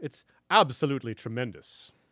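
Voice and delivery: put-on, attempted British accent. Asked by another speaker to try it, imitating Joe's British accent. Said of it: "How about we hear your best approximation".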